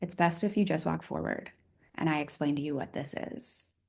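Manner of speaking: soft, hushed whisper. Retelling what a man said from behind, retelling a whisper. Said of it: "he whispers and he goes".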